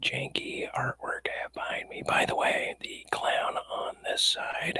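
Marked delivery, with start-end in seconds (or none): 0.0-2.0 ASMR voice, much quieter, higher. Speaking to the ladies and gentlemen watching, in best ASMR voice. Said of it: "with my best ASMR voice".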